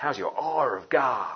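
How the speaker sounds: spoken in an American accent.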